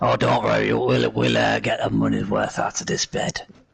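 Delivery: mock middle-aged smoker voice. Joking with the other players about a bed: mid-forties chain smoker voice. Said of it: "You sound like a mid-forties chain, chain smoker".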